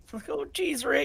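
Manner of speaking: very high, baked stoner cartoon-kid voice. In a tabletop game, a player voices their character, half Shaggy, half Morty. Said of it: "Half Shaggy, half Morty".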